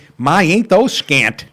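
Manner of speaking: slow, drawn-out wisecracking delivery. Retelling a friend's joke about a diver's bathing suit: imitating Zook. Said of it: "and he goes just like this".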